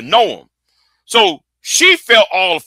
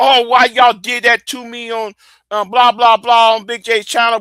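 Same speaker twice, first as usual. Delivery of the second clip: put-on, higher-pitched voice playing the victim; 5 semitones higher than usual. Ranting about Sharon acting like a victim, mocking her playing victim. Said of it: "Sharon acting like a fucking victim".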